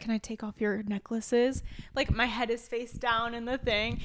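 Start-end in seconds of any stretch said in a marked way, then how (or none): 0.0-1.6 put-on whisper, quieter. Retelling what a man whispered in their ear: imitating someone whispering. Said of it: "whispered in my ear at first".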